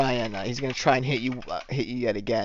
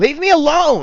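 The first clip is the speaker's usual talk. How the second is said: very loud, very high-pitched shrieking yell; 10 dB louder than usual. Voicing a struggling attacker who misses a punch: yelling in character. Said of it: "he yells".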